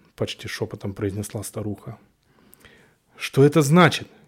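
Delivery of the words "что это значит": loud, frustrated, annoyed, vexed shout. Narrator voices the heroine answering the old woman, shouting in vexation. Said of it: "крикнула я с досадой".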